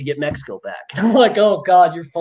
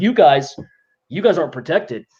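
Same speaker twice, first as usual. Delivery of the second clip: calm, deadpan, straight-faced put-on voice. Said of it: "He just talks straight-faced".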